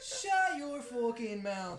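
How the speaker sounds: aggressive put-on fighter voice, spat out. Picture children attacking someone and act out their words in a Conor McGregor voice. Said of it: "with the Conor McGregor one".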